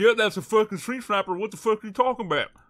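fake country accent, loud. Repeating what a man said out of character, imitating his country accent. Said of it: "he's still talking with a country accent".

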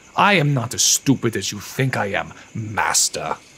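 venomous, contemptuous, talking-down condescending tone. Keegan confronts his master, addressing him as master, poisonously condescending. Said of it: "in a poisonously condescending tone".

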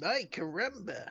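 put-on cartoon boy voice. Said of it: "the voice of Bart Simpson".

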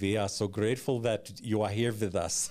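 put-on heavy German accent. Retelling what he said face to face in a close embrace: big german accent. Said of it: "in his big German accent voice".

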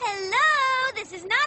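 happy-sounding. Nana answers a phone call, sounding pretty happy. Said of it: "you sound pretty happy".

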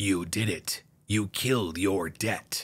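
sinister grim reaper voice, low and slow. A grim reaper on a screen speaks to George, evil voice. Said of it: "spoke in an evil voice".

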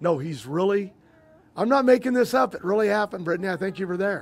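ordinary talk

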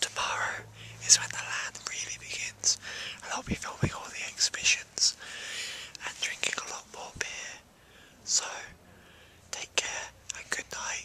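hushed, very quiet whisper. Signing off at night with people asleep in tents nearby, whispering. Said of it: "it might be kind of creepy with me whispering".

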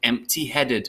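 plain reading voice

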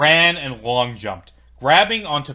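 ordinary delivery

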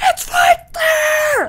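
very high, shrill, loud scream. Acting out the viewers screaming at the player about a key: imitating viewers screaming. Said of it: "you guys were probably all screaming at me like".

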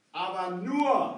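nur stressed, said slowly and loudly.

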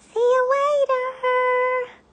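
loud, very high cry. Yuri the puffin launches into the air and leaves Lars behind, crying out. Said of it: "He cried as he disappeared".

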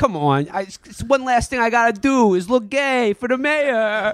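put-on Boston accent. Retelling how a man answers mocking politicians, in a boston accent. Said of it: "enjoying my Boston accent".

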